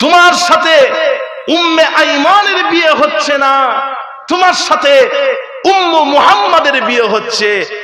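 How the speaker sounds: emotional, high, loud impassioned cry.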